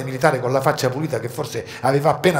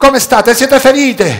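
shrill, very high, very loud all-out shout; 11 semitones higher, 11 dB louder than usual. The narrator calls to the girls found under the stones, shouting with full voice. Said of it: "chiesi con tutta la voce che avevo in corpo".

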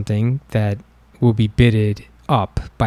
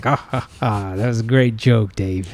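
mock booming laugh while speaking, slower. Dave retelling how a man answered him: imitating a booming laugh. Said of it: "He started laughing, a booming".

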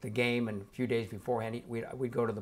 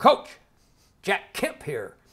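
very loud, pitched-up, distinctive announcing voice; 9 semitones higher, 9 dB louder than usual. Retelling how Jack Kemp greeted him on the phone: Jack Kemp voice. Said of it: "he had that distinctive voice".

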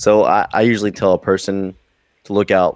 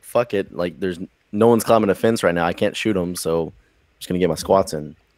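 usual speaking voice

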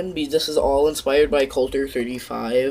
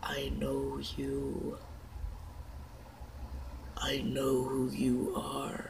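sudden, slow, rasping voice; 15 dB quieter than usual. Telling a story, voicing a mysterious voice heard at bedtime: raspy voice. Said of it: "raspy voice".

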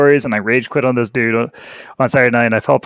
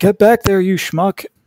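play-acted, pitched-up yell; 8 semitones higher than usual. Retelling a master yelling at his models to return: imitating a master yelling. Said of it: "their master's yelling at 'em, like".

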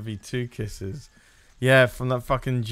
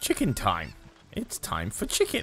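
put-on puppet duck character voice; 4 dB quieter than usual. Playing a video game, doing a Green Duck impression. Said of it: "That's my impression of Green Duck".

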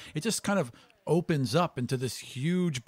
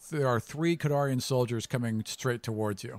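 ordinary delivery

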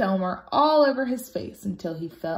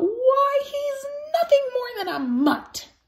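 very high, shocked, horrified outcry. Narrator reads one of the dogs answering the newcomer's claim; crying out. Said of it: "cried out".

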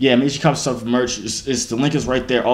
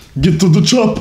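put-on, loud, pitched-up Russian accent; 7 semitones higher, 6 dB louder than usual. Showing off his accents, the speaker tries a Russian accent. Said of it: "What do Russian people say?".

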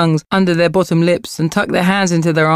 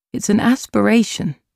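understated, unforced, even tone; 4 semitones higher than usual. Narrator reads a mother answering her daughter, quietly. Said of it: "said her mother quietly".

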